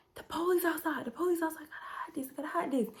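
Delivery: high, hushed whisper. Retelling what her auntie said when the police were outside, whispering. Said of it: "I don't know why I'm whispering it now".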